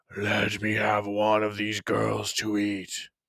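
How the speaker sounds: low, deep beast voice calling like an elephant. Narrating a story, the beast speaks to the boy, low elephant-like voice. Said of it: "spoke in a voice like the low call of an elephant".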